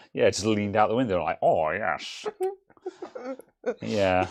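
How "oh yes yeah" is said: sing-song parking warden character voice. Joking about a warden who leaned out the window, doing a parking warden impression. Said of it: "that's my impression of a parking warden".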